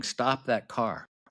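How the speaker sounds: mock light, half-shouted mild yell. Retelling how people at the restaurant shouted about a car: imitating people yelling. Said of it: "the people at the restaurant are yelling".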